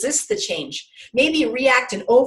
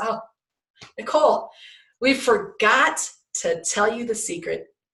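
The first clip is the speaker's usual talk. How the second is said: put-on laughing while talking, drawn out. Retelling what a fellow pilot said in the debrief: imitating a laughing, chuckling remark. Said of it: "he says to me with a laugh and a chuckle".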